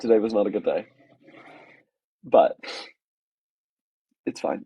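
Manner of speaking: voice holding back tears.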